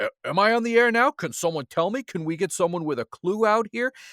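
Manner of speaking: mock, heavy, biting sarcasm. Retelling Bobby the Brain Heenan yelling at technical staff: sarcastic Bobby Heenan impression. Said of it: "he's being super sarcastic".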